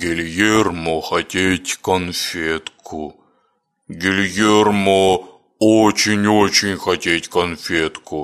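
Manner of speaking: plaintive, pitiful, very deep bass voice. Narrator reads a crude-featured stranger's plea, in a pitiful, very deep bass voice. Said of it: "невероятно жалостливым и жутко басистым голосом".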